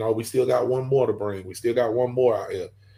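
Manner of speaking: plain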